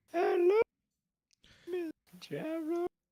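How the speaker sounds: top-of-range high voice. Showing off vocal range with no voice changer, highest possible pitch. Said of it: "This is the highest I can go".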